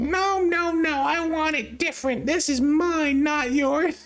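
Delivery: exaggerated, very nasal voice, through the nose. Showing off a funny voice: exaggerated nasal voice. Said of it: "It's also very nasally. It's just funny in the nose".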